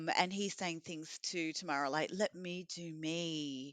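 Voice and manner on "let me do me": put-on calm, very slow delivery. Recapping what Brent said to Tamara, in Brent's fake calm voice. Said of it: "Brent got his fake calm voice".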